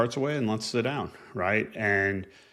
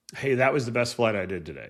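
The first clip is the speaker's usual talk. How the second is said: mock, sarcastic, upbeat cheerfulness. Imitating a squadron mate's remarks: imitating sarcastic positivity. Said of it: "he became sarcastically positive".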